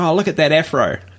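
ordinary talk, nothing marked

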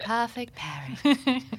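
high, loud, slow voiceover voice.

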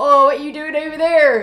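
put-on Somerset accent. Acting out a scene, switching between two voices, one in a Somerset accent.

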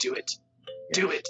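put-on sinister character voice. Mimicking how the other player goads the angry character: imitating the Emperor. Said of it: "you're just like".

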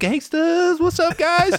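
very high-pitched, way overexcited voice. Retelling how Brandon greeted the room: imitating Brandon way too excited. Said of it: "way too excited for the mood of the room".

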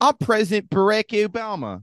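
put-on heavy Philadelphia accent, pitched way up. In an improv scene where every character has one, thick Philly accent. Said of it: "all the characters have a thick Philly accent".

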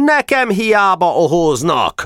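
full, roaring bellow. A speaker at a meeting answers the opposition's jeers, roaring. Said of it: "ordította szónok".

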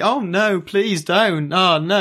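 very high, slow, breezy, cheerful fake begging. Retelling how a character calls the mob boss, doing her happy mock-pleading. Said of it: "and she's just happily".

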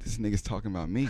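ordinary talk, nothing marked

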